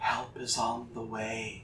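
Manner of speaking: very soft, hushed half-whisper. Voicing a character who sends a message into a bubble: half-whispering. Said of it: "she whispers into the bubble".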